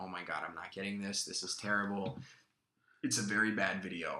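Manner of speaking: ordinary talk, nothing marked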